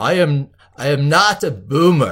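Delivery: drawn-out, booming, slow, loud put-on character voice. Answering whether he is a boomer: Arnie voice. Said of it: "in the voice of Arnie".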